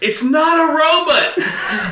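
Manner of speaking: high-pitched, loud, slow, drawn-out yell.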